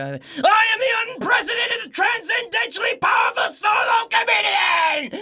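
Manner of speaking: very high, very loud, very slow, drawn-out shout. Retelling translating the comedian's line on stage: imitating a loud high-energy shout. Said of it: "Did I blow the mic on that?".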